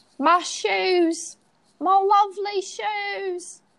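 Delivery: very high put-on Essex accent, shoes drawn out. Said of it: "how good are you at doing an Essex accent?".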